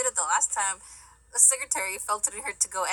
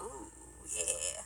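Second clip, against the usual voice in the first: deep, hushed, lecherous ooh yeah. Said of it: "Homeboy is like".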